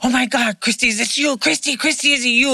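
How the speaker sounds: put-on frantic, panic-stricken, high pleading voice. Retelling a panicked phone caller who kept asking for christy, imitating panicked yelling. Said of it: "they're yelling and screaming".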